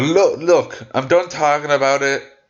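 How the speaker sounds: put-on startling voice. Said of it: "in a startling, startling voice".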